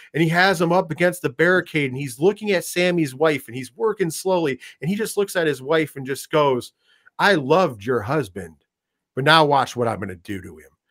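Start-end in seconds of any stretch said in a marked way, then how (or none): 7.1-10.6 calm, collected, composed, sinister voice. Retelling a line said to a man's wife: calm, collected Roman Reigns imitation. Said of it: "that very calm and collected".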